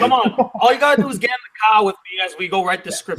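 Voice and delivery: casual, friendly put-on Boston accent. Act out one friend urging his best friend to come write the script, in a put-on Boston accent. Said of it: "You gotta do it with the Boston accent".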